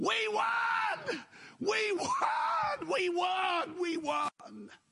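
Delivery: shrill, very high, very slow, stretched-out scream. Retelling how a wife bounded in the door: imitating a woman screaming. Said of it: "just screaming at the top of her voice".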